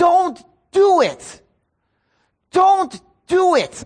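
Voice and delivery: acted, crying, very slow, high, drawn-out pleading shout. Recalling shouting at the computer alone at home, the speaker is retelling shouting at a screen. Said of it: "I'm shouting at the computer".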